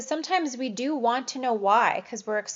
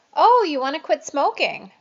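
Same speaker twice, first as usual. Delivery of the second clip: questioning rising inflection lifting on "smoking"; 4 semitones higher, 7 dB louder than usual. Showing how to reflect a patient's words back: questioning rising inflection. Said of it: "that inflection in your voice".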